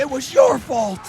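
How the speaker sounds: mock accusing, blaming tone, loud and slow.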